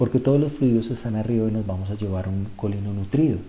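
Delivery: ordinary talk, nothing marked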